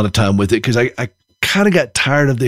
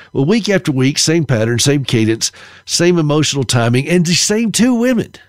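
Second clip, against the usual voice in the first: normal talking voice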